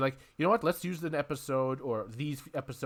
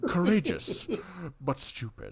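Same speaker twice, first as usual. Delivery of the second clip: put-on cartoon robot voice, higher; 4 semitones higher than usual. Showing how the voice actor sounded as Apocalypse: Beast Wars Megatron voice. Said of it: "his Beast Wars Megatron slash Unicron trilogy Megatron voice".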